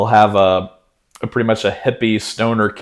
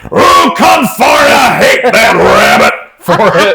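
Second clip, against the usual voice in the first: loud, very high, slow, swooping cartoon cowboy holler; 13 semitones higher, 9 dB louder than usual. Describing a string of cartoon voices, doing a Yosemite Sam voice. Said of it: "some Looney Tunes voices with uh, Yosemite Sam".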